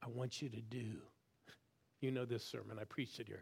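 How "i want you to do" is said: still, small, soft, hushed half-whispered voice. Retelling how god spoke in a still small voice: imitating god half-whispering. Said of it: "eventually whispers".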